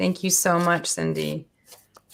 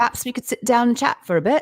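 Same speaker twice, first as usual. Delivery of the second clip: slightly raised, bad British accent. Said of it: "I have to stare in your eyeballs when I do it".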